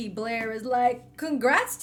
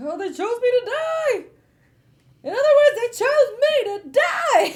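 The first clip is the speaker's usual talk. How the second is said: mock frantic freak-out, very high, raised, panicked; 12 semitones higher, 8 dB louder than usual. Retelling a book scene where Peyton learns she was chosen: imitating Peyton freaking out. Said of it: "Peyton is now freaking out".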